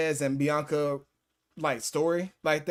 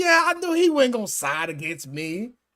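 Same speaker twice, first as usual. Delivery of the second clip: amused laughing, high and swooping; 8 semitones higher, 4 dB louder than usual. Retelling a wrestling moment, imitating Roman Reigns laughing. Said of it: "Roman Reigns smiling, laughing, like".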